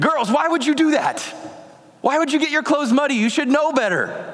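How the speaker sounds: knee-jerk angry scolding snap, pitched very high. A father retelling how he snapped at his young daughters: retelling snapping angrily. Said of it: "With an angry tone".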